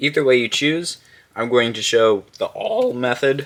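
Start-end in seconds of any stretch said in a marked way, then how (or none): 1.4-3.5 cracked voice, breaking partway through. While explaining a method, the speaker's voice cracking. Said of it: "Wow, voice crack".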